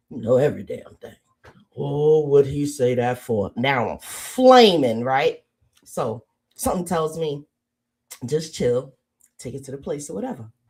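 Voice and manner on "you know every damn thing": put-on mumbling mutter, lower pitch, faster pace. Retelling an argument with a man, mimicking a man mumbling. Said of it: "I hear him mumble under his breath".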